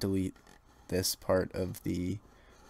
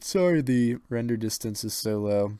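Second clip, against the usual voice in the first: yawning while talking, louder, higher; 3 semitones higher, 6 dB louder than usual. Talking viewers through a map, yawning while talking. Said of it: "also sorry I'm yawning".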